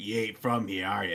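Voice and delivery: easygoing, amused local man's voice. Retelling ordering at a bagel shop, imitating a smiling counter man. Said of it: "he just smiles at me like".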